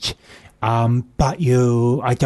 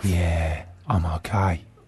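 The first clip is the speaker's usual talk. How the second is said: very low, soft, hoarse husky voice; 7 semitones lower, 5 dB quieter than usual. Playing a role in a comedy sketch, answering a greeting in a husky voice. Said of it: "Very husky voice you've got there".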